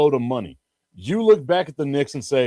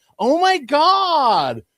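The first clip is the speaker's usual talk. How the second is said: very high squeaky exclamation with "god" drawn out; 12 semitones higher, 4 dB louder than usual. Act out a basketball player looking at the ref after a missed layup, high-pitched Karl-Anthony Towns impression. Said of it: "me making my voice that high pitch".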